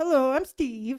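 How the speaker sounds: attempted Canadian accent. Quoting someone who did a Canadian accent for the speaker, Canadian accent. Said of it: "Canadian accent for me".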